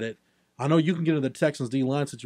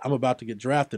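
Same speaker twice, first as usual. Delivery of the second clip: mock nonchalant, casual, offhand tone. Retelling getting a draft phone call, imitating a nonchalant remark. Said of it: "I said it so nonchalant".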